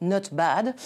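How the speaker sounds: put-on Italian accent that slides into French. Quoting a football manager's understated answer: attempted italian accent. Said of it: "That's my attempt at an Italian accent, rather French, I'm afraid".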